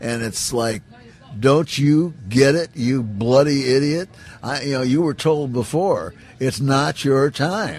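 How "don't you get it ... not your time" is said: put-on irritated voice, higher, louder. Retelling what a voice said to him at an aircraft accident: mock-irritated scolding. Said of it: "this time the voice was very irritated".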